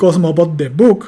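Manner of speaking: nuclear accent falling on book. Explaining focus with an English example sentence, main stress on book. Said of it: "así como lo acabo de pronunciar ... el constituyente que recibe el acento nuclear ... es el foco de book".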